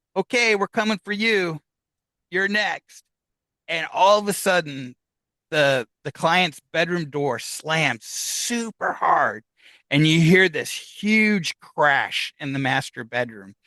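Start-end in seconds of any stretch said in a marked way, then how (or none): 0.2-3.1 acted-out, high, raised yell at full voice. Retelling how the medium yelled out loud at the spirit: imitating someone yelling. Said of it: "she yells at hi-, out, out loud".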